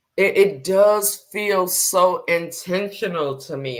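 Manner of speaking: close to tears, emotion held in, keeping composure. Explaining that someone's inaction feels intentional: holding back emotion. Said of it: "I'm trying not to get emotional right now".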